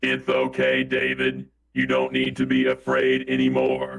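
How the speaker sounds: very slow, mysterious, put-on voice. Voicing an offscreen mystery voice comforting the pastor: put-on mystery voice. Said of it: "How's that voice?".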